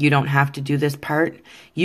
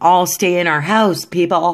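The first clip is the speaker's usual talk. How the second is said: loud, yelled call; 4 semitones higher, 4 dB louder than usual. Streamer calls out to people still outside: yelling out the window. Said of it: "I'm yelling that out my window".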